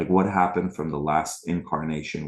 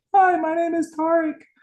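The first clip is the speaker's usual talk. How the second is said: loud, high, squeaky cartoon voice; 7 dB louder than usual. Recalling introducing himself when his voice stuck, Mickey Mouse voice. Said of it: "stuck in the Mickey Mouse voice".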